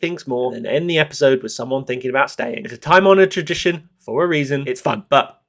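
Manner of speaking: ordinary delivery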